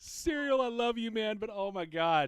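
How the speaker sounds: very high-pitched, laughing through the words. Responding to Serial, who asked how to spy check, laughing so hard. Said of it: "I'm laughing so hard I can't".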